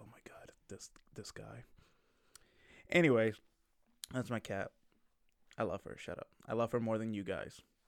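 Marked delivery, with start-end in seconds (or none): 0.0-1.6 weary, fed-up, hushed whisper. Voicing a sleeping cat that is tired of hearing the speaker: voicing the cat, fed up. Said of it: "she's tired of hearing my voice, and she's just like".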